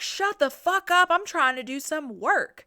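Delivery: put-on high, exasperated, fed-up yell. Retelling a scene where Mary is tied up: imitating Otis yelling. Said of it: "And Otis is yelling".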